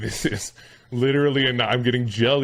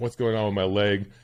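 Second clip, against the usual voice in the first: put-on distressed, distraught voice. Retelling waiting in the hospital: imitating own distress. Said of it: "insanely tired and, like, distraught".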